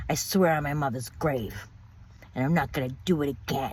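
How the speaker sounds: mock-angry tone. Retelling what he said on opening the bathroom door while she cried, mock-angry. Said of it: "with an angry look on his face and an angry tone in his voice".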